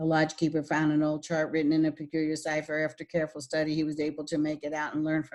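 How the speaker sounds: flat, robotic, one-pitch monotone reading. Reading a passage aloud to show monotone speaking: flat monotone reading. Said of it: "that is monotone speaking on one route, which is very ro- robotical".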